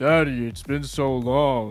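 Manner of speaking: put-on deepened kid voice. Improvising a child greeting a parent at pickup, child's voice octaves lower. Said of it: "my child's voice down a few octaves".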